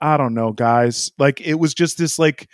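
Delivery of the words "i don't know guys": resigned voice, put on. Retelling a driver's radio question to his team: imitating Leclerc's resigned tone. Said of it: "And he was like".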